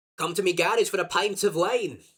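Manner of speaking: put-on Scottish accent, easing into the intonation. Saying the phrase used to get into an accent, Scottish accent. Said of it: "I get into the Scottish voice".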